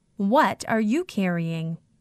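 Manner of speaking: plain reading voice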